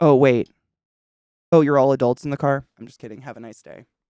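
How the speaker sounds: very loud, utterly flat, expressionless deadpan. Retelling what someone at the border said to the car, mock-deadpan retelling. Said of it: "it was the most fucking deadpan".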